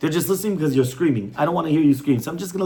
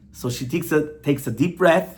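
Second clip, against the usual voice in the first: usual speaking voice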